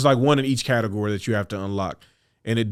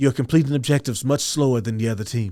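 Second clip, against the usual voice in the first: mock, very condescending, superior talking-down tone. Playing a game with friends, quoting Leviathan in a mock-condescending Leviathan voice. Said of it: "Leviathan's had very condescending voice".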